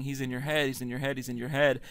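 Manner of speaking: ordinary talk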